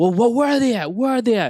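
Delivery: play-acted, very high, loud, pissed-off father voice. Recounting the dad freaking out and yelling at them, imitating an angry dad. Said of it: "he's pissed".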